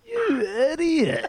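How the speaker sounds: put-on very high, laughed-through mocking tone. Retelling how a man in the change rooms mocked his email, mimicking mocking laughter. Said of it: "he laughed at me and goes".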